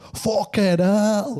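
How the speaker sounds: put-on squeaky, very high Glaswegian accent outburst. Retelling a big glaswegian man's reaction on coming back in, glaswegian accent. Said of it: "a big Glaswegian fella".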